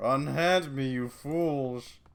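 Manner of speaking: put-on very slow, drunken, inebriated bellowing roar. A drunk troll dragged down a hallway by guards yells at them, drunken troll roar. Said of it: "The troll's voice comes out in an inebriated roar".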